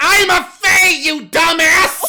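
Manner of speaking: shrill, very loud, very high, slow, drawn-out yell. Promising to whisper a secret, then shouting the answer: loud shout. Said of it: "you got a loud voice for someone really small".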